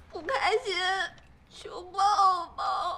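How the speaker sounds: tearful cutesy whining, slowed right down. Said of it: "装可爱个点儿".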